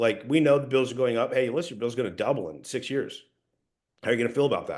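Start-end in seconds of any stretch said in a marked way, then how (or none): 1.3-4.8 assured, confident, matter-of-fact delivery. Coaching a trainee on delivering information: certain and confident. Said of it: "you gotta do it with certainty and confidence".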